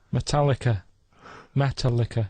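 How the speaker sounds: metallica pronounced like "metal liquor". Saying Metallica on request, like "metal liquor". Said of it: "make Metallica sound like metal liquor".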